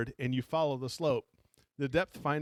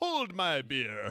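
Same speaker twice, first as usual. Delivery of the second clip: faux, put-on British accent. Saying a joke line the way a british author would: put-on british accent. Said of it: "he'd have to say it with a British accent".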